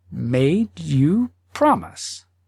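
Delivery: very slow, drawn out, measured speech. Narrating a story, the wife replies to her husband, said very slowly. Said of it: "said very slowly".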